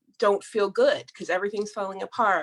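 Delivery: ordinary delivery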